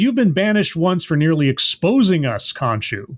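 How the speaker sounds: ordinary talk, nothing marked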